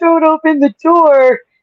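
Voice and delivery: mock screaming. Retelling how everyone reacted to a scary scene: imitating screaming. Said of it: "We were all screaming, like".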